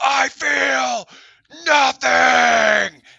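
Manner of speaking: mock furious villain voice, gritty, high, rasping, stretched out. Mocking a movie scene where Dracula talks to his wives, mock-angry Dracula line. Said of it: "you sound really angry for someone who feels nothing".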